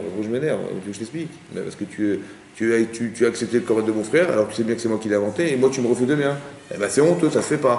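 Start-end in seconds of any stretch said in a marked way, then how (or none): none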